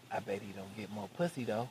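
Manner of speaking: very quiet, leaned-in half-whispered aside. Retelling how one friend leaned over to another: imitating a half-whisper. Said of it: "leaned over to Todd and whispered".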